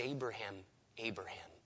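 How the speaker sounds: soft, low, hushed calling.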